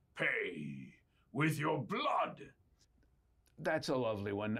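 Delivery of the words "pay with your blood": put-on aggressive, forceful guard voice. Voicing a guard who stops someone walking out with a fork: aggressive Imperial Guard voice. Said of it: "That's very aggressive".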